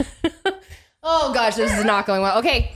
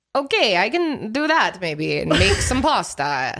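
fake, put-on Italian accent; 3 semitones lower than usual.

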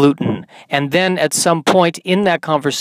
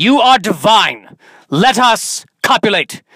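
bad, fake old English stage accent, high and slow; 6 semitones higher, 3 dB louder than usual. Acting out walking up to a woman to speak: bad Shakespearean accent. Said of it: "speak to her in a bad Shakespearean accent".

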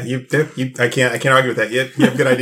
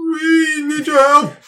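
very high, stiff, stilted alien voice. Retelling how someone asks for help, done like the people from Galaxy Quest. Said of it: "he says it like the people from Galaxy Quest".

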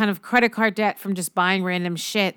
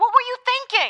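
very high-pitched, shrill yell. In a scene, Adam demands an explanation from someone, shouting. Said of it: "Don't shout at people".

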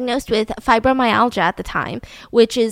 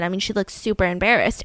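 plain

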